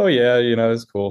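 put-on slipping into a light English accent. Retelling how Alex Fitzpatrick answered when asked about it: his English accent. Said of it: "in his little English accent".

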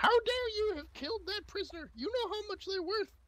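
shrill, very high, vicious squeaky scolding. Game master voicing the small halfling scolding the bosun, squeaking viciously as halfling. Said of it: "He's a very large feather in his hat. He's very short. He's a halfling. He's bright blue clothing with many medals on it. And you would assume that is the captain. ... and you can hear the small halfling squeaking very".

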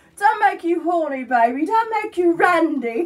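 loud drawn-out English accent. Showing what the speaker can do: Austin Powers voice. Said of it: "I can do Austin Powers".

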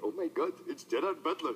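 bad, poor put-on Indian accent. Speaker retelling a man at a visa office recognizing him, bad Indian accent. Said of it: "Indian accent".

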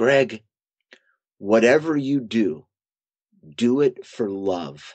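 put-on very strained voice. Retelling a father's words from a hospital bed: imitating a very strained voice. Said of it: "a very strained voice".

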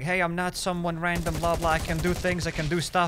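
ordinary talk, nothing marked

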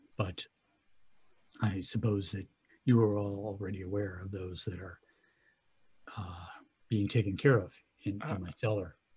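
very quiet, hushed, speaking very softly. Voicing a character who speaks to the players: very quiet. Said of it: "he says this very quietly to you".

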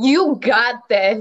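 loud, whole-body, all-in emphatic delivery. Voicing what her face would say without caring, with your whole body. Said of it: "Say it with your whole body".

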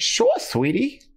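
put-on bad, very high, old 1920s Brooklyn accent. Speaker shows how their accent slips, in a bad old 1920s Brooklyn accent. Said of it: "that old 1920s kind of like".

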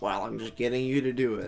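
put-on snarky voice. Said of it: "you being snarky about me doing the Devo".

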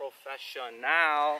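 slow, high, mock announcer voice.

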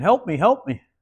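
tiny squeaky toad voice. Telling a joke, voicing a talking toad heard by a pond, little squeaky toad voice. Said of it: "I heard this little squeaky voice saying".

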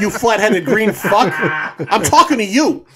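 put-on Brooklyn accent. Imitating the little German girl from the film: Brooklyn accent. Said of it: "speaks like she's from Brooklyn".

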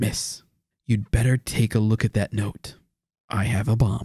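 hushed, secretive, confiding stage whisper under the breath. Retelling how Cooper leans over to a flight attendant: imitating D B Cooper half-whispering. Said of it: "he leans over to her and he whispers".

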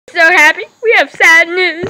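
loud, cracking up, laughing through the words. A host opens a video for the viewers, laughing while talking. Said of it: "why are you still laughing?".

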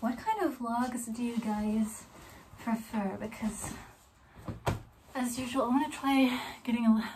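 soft, winded, out-of-breath talking. A vlogger asks viewers a question while still out of breath. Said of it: "I'm still out of breath".

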